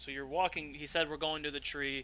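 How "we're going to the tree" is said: normal talking voice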